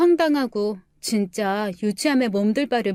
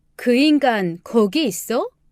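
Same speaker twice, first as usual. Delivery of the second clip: plain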